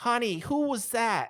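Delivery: very high, very loud, shrill woman snapping gum. Describing a voice the players hear in the background as they walk away: shrill gum-snapping woman's voice. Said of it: "a shrill female voice. It's like snapping gum".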